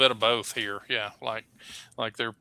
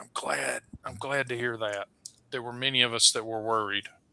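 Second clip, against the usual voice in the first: soft, hushed half-whisper under the breath; 7 dB quieter than usual. Voicing a character who looks around before answering: half-whispering NPC. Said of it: "just sort of whispers".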